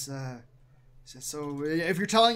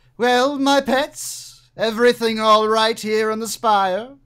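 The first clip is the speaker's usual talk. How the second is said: very loud, high calling voice; 5 semitones higher, 9 dB louder than usual. Voicing a figure heard calling up the stairs to pets: calling up the stairs. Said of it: "you hear a voice calling up the stairs".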